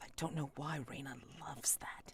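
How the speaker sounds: very quiet under-the-breath muttered aside. Voicing a character's quiet aside about Reina: muttering under her breath. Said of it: "she says under her breath".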